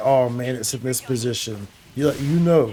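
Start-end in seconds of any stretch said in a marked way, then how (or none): none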